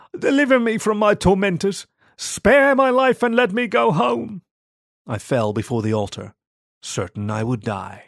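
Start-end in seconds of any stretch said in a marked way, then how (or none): 0.2-4.4 very high voice, cracking and pleading. The narrator, crawling forward at Mass, pleads to the Lord, voice like broken glass. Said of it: "I pleaded, my voice like broken glass".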